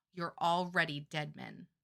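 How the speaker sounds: quiet, flat, expressionless deadpan. Recapping a book scene, she addresses the men who hurt Elide: deadpan. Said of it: "in her signature deadpan voice just says".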